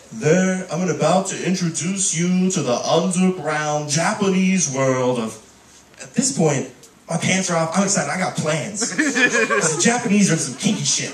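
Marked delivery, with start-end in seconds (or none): 0.2-5.5 full documentary narrator voiceover delivery. Retelling how a documentary about women in Japan opened, in a documentary narrator voice. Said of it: "It went full documentary voice".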